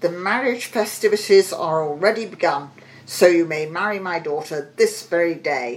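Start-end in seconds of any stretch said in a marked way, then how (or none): none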